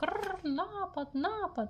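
very high, piercing, shrill alarmed shout. A parrot flaps its wings as coconuts hit the children, shouted alarm. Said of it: "затріпотів крилами і закричав".

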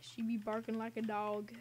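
ordinary talk

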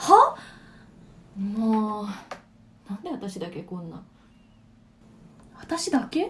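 annoyed, irritated squabbling outburst.

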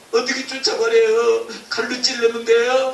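weeping, tearful voice. Someone asking the teacher questions, crying. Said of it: "도대체 왜 우는 거야?".

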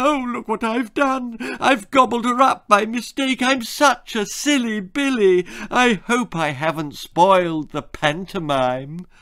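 put-on wailing voice. A crocodile cries pretend tears before the audience, high-pitched Gwendolyn impersonation. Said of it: "wailed in a high-pitched impersonation of Gwendolyn".

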